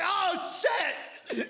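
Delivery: put-on sudden high-pitched startled cry. Imitating a startled player whipping the camera around: imitating a startled player. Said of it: "whipping the camera around and being like".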